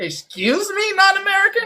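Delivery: put-on entitled woman voice, high, widely swinging pitch. Mocking people who think deportation won't touch them: mocking Karen impression. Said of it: "your impression of the".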